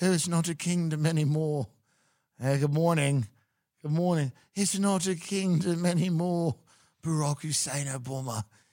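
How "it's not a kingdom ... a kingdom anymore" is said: fake British accent, slow and drawn out. Imagining a child walking around talking, put-on British accent. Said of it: "walking around with a British accent being like".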